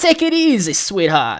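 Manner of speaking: swooping fifties mob boss voice. Repeating a line just heard in a clip: Penguin as 1950s mob boss. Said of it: "like a nineteen fifties mob boss".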